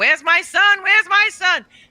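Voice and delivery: very high, loud, frantic, panicked screaming. Retelling searching a mall for a missing son: imitating own panicked screaming.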